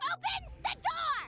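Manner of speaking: shouting. Outside a closed door, a visitor demands to be let in, yelling. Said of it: "Stop yelling".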